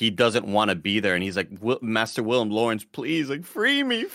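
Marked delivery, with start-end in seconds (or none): 1.8-4.0 scared, terrified pleading, swooping and rising. Retelling a scene a voice actor performed, imitating a character's terrified plea. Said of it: "he just sounds so fucking terrified".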